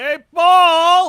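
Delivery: very loud, very high, drawn-out yell. A character calls out to a man near a line of cadets, yelling a name. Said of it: "I'm going to say under my breath".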